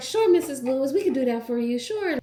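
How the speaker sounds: high, loud, eager-to-please friendly voice.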